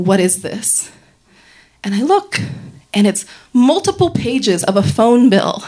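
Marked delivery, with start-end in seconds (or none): 0.0-0.9 play-acted low, steady, even, commanding voice. Recounting how he laid the papers on the bed and asked: imitating an even, commanding tone. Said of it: "in a very even, commanding tone".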